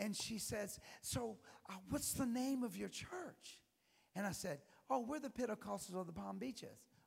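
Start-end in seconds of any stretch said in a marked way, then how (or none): 1.0-3.6 bright, eager, excited tone at a high pitch. Retelling a woman asking the speaker's church name, mock excited, all smiles. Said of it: "she's all smiles and she's all excited".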